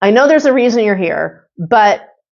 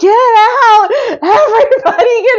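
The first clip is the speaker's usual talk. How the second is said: high, drawn-out, mock frantic, freaked-out yelling; 14 semitones higher than usual. Retelling freaking out at souls in the room: imitating her own yelling. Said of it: "I started yelling".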